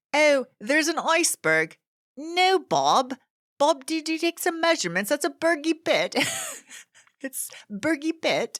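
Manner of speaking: fake British accent, very high pitched. Joking about iceberg names, in a put-on British accent. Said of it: "I want to do a British accent".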